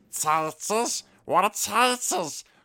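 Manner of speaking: very high, cave-creature style voice. Listing impressions they can do, the speaker demonstrates a Gollum impression. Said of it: "The only one I could also do is".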